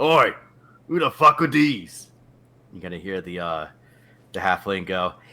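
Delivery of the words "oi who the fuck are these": rough, gruff, very loud shouting voice. Voicing a gruff-looking guard calling out to arriving strangers: calling out as a gruff guard. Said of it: "calls out".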